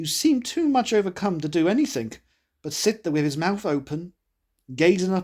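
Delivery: ordinary delivery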